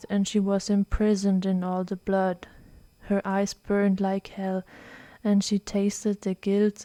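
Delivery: plain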